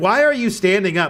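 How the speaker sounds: put-on angry voice, sharp and scolding. Retelling a teacher scolding a student for standing up in class: imitating a mad teacher. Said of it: "she got so mad at me".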